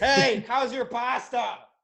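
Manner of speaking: very loud, very high, drawn-out yell. Joking about dinner with the neighbor downstairs: pretend yelling through the floor. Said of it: "yelling through the floor".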